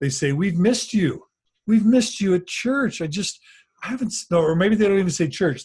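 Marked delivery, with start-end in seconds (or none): 0.3-3.0 mock smarmy, condescending tone, higher pitch. Acting out someone walking up about missed church, mock condescending and smarmy. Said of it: "in sort of a condescending, a little bit smarmy way".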